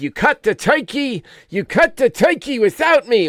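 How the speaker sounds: put-on high-pitched New York accent.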